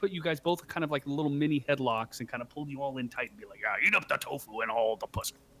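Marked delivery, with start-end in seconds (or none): 3.7-5.3 put-on drunk, crude rowdy voice. Voicing a drunk character pulling friends into headlocks: drunk and crude. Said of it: "Cormon's drunk and crude".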